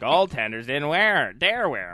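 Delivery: fake elderly man voice. Reading a line from an article aloud, in an Andy Rooney-style old coot voice. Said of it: "I read it in that old coot voice".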